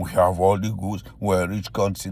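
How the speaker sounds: plain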